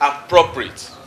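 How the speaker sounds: stress on appropriate. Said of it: "I mean the word".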